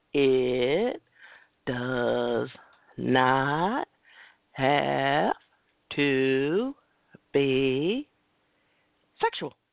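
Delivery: very slow, very low, halting delivery. Speaker repeats a point to the audience, saying it a little slower. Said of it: "I'm going to say it a little slower".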